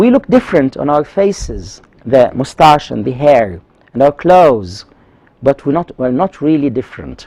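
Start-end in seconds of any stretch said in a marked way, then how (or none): none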